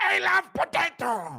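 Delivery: pushed-up, very high voice. Asked for Yoel telling Smeagol something, doing a Yoel Romero impression. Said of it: "Impression of Yoel".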